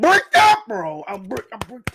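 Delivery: restrained excited shout. Reacting to a manga panel, trying not to yell too loud: very excited, holding back a yell. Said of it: "I can't yell too loud".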